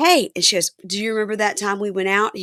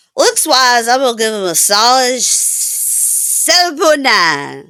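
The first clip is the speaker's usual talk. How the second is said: mock drunken talking, higher and louder; 4 semitones higher, 7 dB louder than usual. Retelling a scene, quoting a drunk rating of looks: imitating drunk speech. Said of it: "And drunkenly, she goes".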